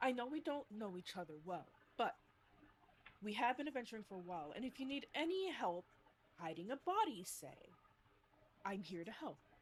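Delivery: confiding, private, just-between-us confidential tone. A character speaks privately to Solomon and Pisana, lowered confiding voice. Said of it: "he lowers his voice so only Solomon and Pisana".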